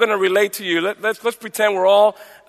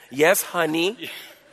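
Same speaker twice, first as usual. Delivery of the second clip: put-on meek, soft, humble, deferential voice; 3 semitones lower, 7 dB quieter than usual. Retelling a husband answering his wife, imitating a humble reply. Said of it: "he speaks very humbly like that".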